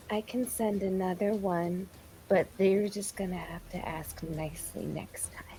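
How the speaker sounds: very soft, barely audible whisper. Voicing a character who whispers to her rock after casting: whispering in character. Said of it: "she just kind of whispers to it".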